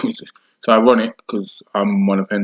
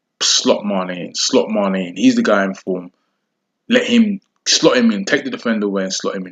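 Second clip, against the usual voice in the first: normal talking voice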